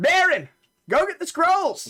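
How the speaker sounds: shouting. Voicing a character who calls for someone to fetch scrolls: yelling. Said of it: "you'll hear him yell".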